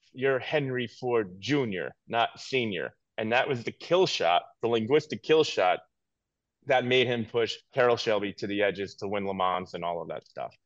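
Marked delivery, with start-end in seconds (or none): 0.2-3.0 put-on drawn-out, broken English in Italian accent. Retelling a story from his book, the speaker voices Enzo Ferrari in broken Italian English. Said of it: "in a very broken Italian English dialect".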